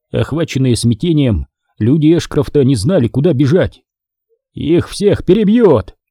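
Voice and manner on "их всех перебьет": high-pitched crying out, exclaiming. As a sniper fires on his men, Ashcroft exclaims to Naylor. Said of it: "воскликнул Эшкрофт".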